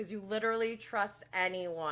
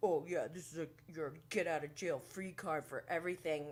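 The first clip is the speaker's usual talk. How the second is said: put-on muttering under breath, quieter; 4 dB quieter than usual. Retelling a remark made in an argument: imitating someone muttering under breath. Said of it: "And then under his breath".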